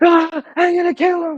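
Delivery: put-on, shrill, very high-pitched ranting yell. Retelling what he yelled while stomping out of the store: imitating someone yelling. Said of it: "And he's yelling".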